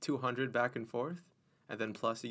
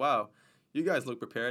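mock sarcastic tone; 6 dB louder than usual. Retelling what park rangers said to the speaker's group, acted out as mock-sarcastic. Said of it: "in the most sarcastic way ever".

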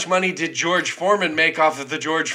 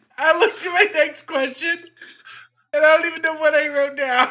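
very high, uncontrollable giggling, laughing through the words; 12 semitones higher than usual. Looking at the next question written down, can't stop laughing. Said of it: "I can't stop laughing".

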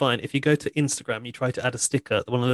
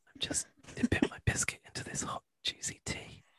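fake ASMR whisper, much quieter. Joking about the new mics, the speaker launches into a fake ASMR whisper. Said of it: "we could do an ASMR video".

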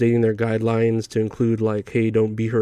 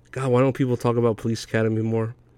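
ordinary talk, nothing marked

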